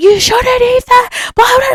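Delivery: very high-pitched scolding yell, acted out. Retelling a double date where a friend yells at her partner: imitating someone yelling. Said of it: "She starts yelling at him".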